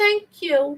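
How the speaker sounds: tiny, high little voice. Retelling the aunt thanking the uncle: imitating a little voice. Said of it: "they had those little voices".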